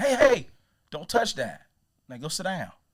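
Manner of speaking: very loud scolding voice. Parent showing the way they don't scold their three-year-old, raised voice. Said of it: "I don't just raise my voice to be like".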